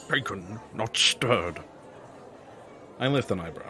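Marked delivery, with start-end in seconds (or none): 0.1-1.6 terrible put-on Scottish-accented secret-agent voice. Talking about favourite James Bond actors: terrible Sean Connery impression. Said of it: "That's a terrible voice impression".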